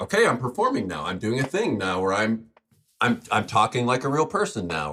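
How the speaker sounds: ordinary delivery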